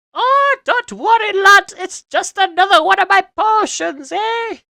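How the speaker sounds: put-on very high, loud, shrill, booming monstrous granny voice. A character by the cauldron answers the visitor, in an ogre-like granny voice. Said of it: "the voice sounded a wee bit like a an ogre like granny".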